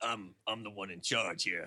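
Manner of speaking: domineering, in-charge voice, every word final.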